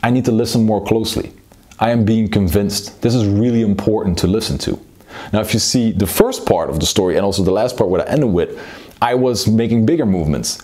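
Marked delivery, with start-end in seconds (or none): none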